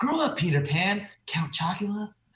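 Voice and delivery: slow, drawn-out dismissive movie-line delivery, a touch high. Quoting a favorite movie scene: imitating Owen Wilson. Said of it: "Owen Wilson's lines too are so good".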